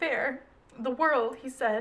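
plain reading voice

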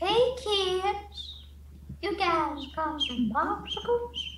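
put-on high, slow drawl, word kids drawn out. Warming up a voice for a game chat: Herbert voice. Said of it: "I do a Herbert voice".

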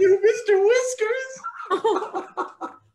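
crying, tearful wail. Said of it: "I'm supposed to cry about my brother".

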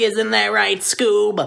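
tight-throated, scratchy, raspy put-on cartoon voice. Teaching a voice trick with a tightened throat, raspy scratchy voice. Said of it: "slightly tighten your throat just a tiny bit, so that way you'll get a raspy, scratchy sounding voice".

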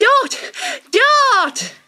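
very high, breathless panting excited cry, word drawn out. A kangaroo bounds into the glade calling a name, crying out, panting excitedly. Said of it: "She cried".

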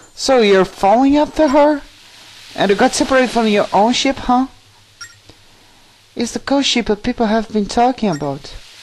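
put-on fairy character voice. A fairy in a game questioning the hero whose friend was taken by the ghost ship, fairy voice. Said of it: "I'm a [name], you see? I'm a fairy".

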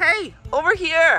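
loud, high-pitched voice calling out. Calling out to get them to follow: loud, high-pitched voice. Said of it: "I'm doing a loud, high-pitched voice".

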